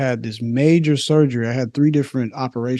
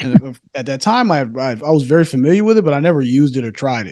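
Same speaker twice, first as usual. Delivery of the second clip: plain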